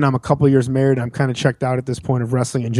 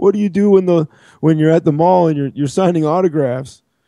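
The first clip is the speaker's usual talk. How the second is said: put-on crying, higher pitched and slower; 3 semitones higher than usual. Retelling what Razor Ramon said in a huddle, imitating him drunk and crying. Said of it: "He's like crying".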